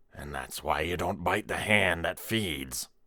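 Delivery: quiet, hushed, soft, under the breath. Reading a story where a coworker teases another: hushed voice. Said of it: "told her in a hushed voice".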